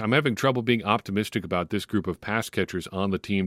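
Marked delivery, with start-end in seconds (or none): none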